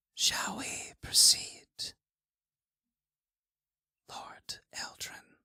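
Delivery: loud, breathy, carrying whisper. Voicing a worker who speaks across the room: loud whisper. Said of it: "in a loud whisper states".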